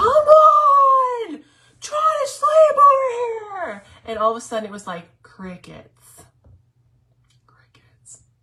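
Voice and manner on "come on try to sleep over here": very high, very slow yell, on stretched. Recounting being kept awake by barking at 3 a.m., retelling a yell. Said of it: "So literally just yelled".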